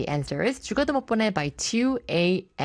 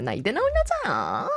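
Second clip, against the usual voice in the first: graceful, refined, elegant film-actress movie-line tone; 3 semitones higher than usual. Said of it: "약간 이런 느낌으로".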